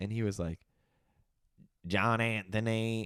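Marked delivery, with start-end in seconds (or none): 1.9-3.1 put-on Southern accent, higher and louder. Retelling what an older coworker said at work: imitating a southern accent. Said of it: "Southern accent".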